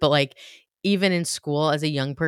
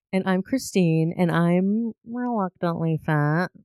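silly put-on cartoon voice; 3 semitones higher than usual. Podcast co-host introducing herself at the show's opening, SpongeBob-like voice. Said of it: "I like that voice you did".

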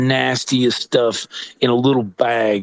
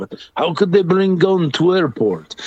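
terrible, fake, put-on Turkish accent; 6 semitones higher than usual. Retelling what a man from Turkey said: horrible Turkish accent. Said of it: "that's the horrible Turkish accent".

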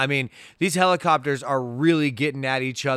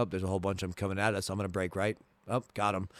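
low, flat, acted pilot deadpan with no inflection; 5 semitones lower, 9 dB quieter than usual. Imitating a pilot in wartime movies: flat pilot voice, no inflection. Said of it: "in true pilot fashion, they never put anything on it. No inflection".

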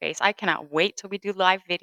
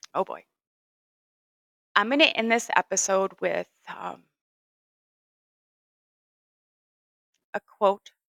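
emotional, choking up, voice catching, pitch swinging. Ending a podcast episode by sharing a quote: choking up. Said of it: "I'm choking up".

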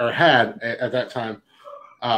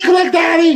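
put-on very high-pitched, loud kid voice; 8 dB louder than usual. Speaker recalls a kid he couldn't stand in the lobby, imitating a kid's high-pitched voice. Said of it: "It was real high pitch".

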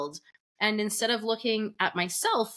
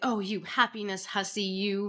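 put-on mock teasing tone; 3 dB quieter than usual. Retelling what a cousin said to the speaker, as a teasing remark. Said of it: "My cousin sort of teasingly said to me".

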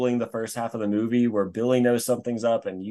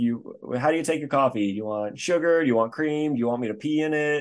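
play-acted dry, deadpan, utterly unbothered delivery; 3 semitones higher than usual. Retelling a line from a movie the girlfriend says: imitating someone saying it deadpan. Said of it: "she just says it totally deadpan".

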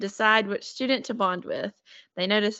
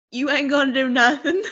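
put-on screaming, higher and louder; 5 semitones higher, 5 dB louder than usual. Retelling a reaction to a book, imitating own past screaming. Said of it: "I was screaming at the book".

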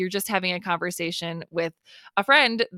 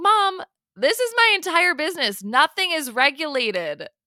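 high, raised, loud shouting outburst; 8 semitones higher than usual. Recounting answering Mom about the podcast, retelling a shout. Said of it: "Sorry for shouting".

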